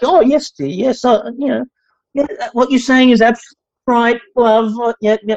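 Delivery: high, condescending, placating tone. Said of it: "wanted us to be condescending and be like".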